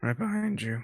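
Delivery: cracked voice, breaking mid-line. A speaker following the group says they're right behind: voice cracking. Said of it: "That voice cracked".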